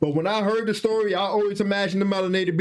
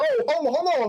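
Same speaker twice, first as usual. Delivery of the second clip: put-on high, nervous, scared voice; 7 semitones higher than usual. Retelling how attackers got scared after a failed jump: imitating scared attackers. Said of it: "Now they scared".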